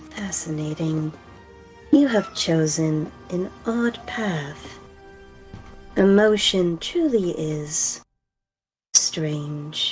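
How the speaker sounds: slow, glitching, corrupted, distorted voice. Narrating as the ground opens up, an unseen voice speaks: very glitched voice. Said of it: "you hear a very glitched voice saying".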